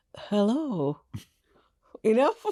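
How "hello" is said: regal, posh, upper-class royal-sounding voice. Asked for a posh royal wave and hello: posh royal hello. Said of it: "could you give us a posh wave and hello today, like royalty".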